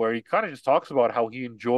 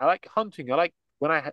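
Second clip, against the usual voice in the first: high, put-on smug British accent. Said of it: "your little British, uh, asshole voice".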